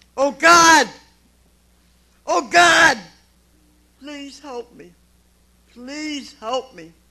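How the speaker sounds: very loud, high-pitched, full-throated screaming. Recounting his own past crisis, acting out his past self, retelling screaming. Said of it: "And I started screaming".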